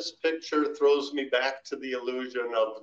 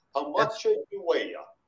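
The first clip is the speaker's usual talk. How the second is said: put-on Italian accent, pitched higher; 4 semitones higher than usual. Retelling how Wally asked Putski his weight, imitating Wally, Italian-sounding. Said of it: "that sounded Italian more".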